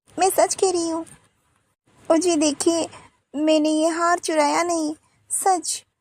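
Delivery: crying, pleading tone. Denying stealing the necklace to her sister-in-law, crying while pleading. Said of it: "तुम रो क्यों रही हो?".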